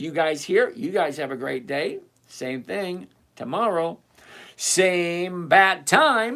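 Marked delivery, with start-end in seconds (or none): 4.6-6.4 put-on slow, drawn-out, campy old-fashioned announcer voice.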